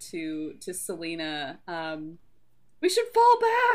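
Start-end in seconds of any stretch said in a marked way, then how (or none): 2.8-3.8 panicky, nervous, very high-pitched frantic shout. Shouting to an ally to fall back while a friend is hurt: frantic nervous shout. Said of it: "And I'm just going to shout".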